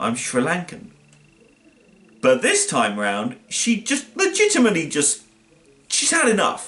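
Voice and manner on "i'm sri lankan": acted muttering under breath, quieter. Retelling a film scene where a character mutters: imitating someone muttering under breath. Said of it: "she mutters under her breath".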